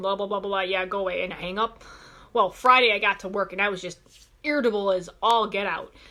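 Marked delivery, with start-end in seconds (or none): none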